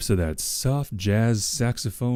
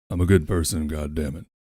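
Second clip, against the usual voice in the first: low, put-on gruff voice, dropped deep; 7 semitones lower than usual. Trying to say a line in a Doctor Live voice, gruff. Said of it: "It just sounds like I'm trying to do a gruff voice".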